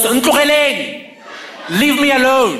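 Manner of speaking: mock, high-pitched yelling. Recalling her yelling out the window at a car, retelling a yell. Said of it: "and yells".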